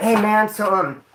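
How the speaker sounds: very slow, unsure, halting delivery. Retelling a cellmate asking how to attack: imitating someone speaking real quiet. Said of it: "He just got real quiet".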